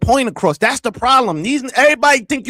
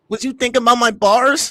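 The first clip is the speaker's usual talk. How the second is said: normal talking voice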